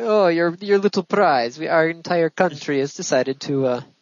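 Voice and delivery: put-on Eastern European accent. Riffing on a lunar lander prize with another speaker: Eastern European accent. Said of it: "that was like Eastern European accent".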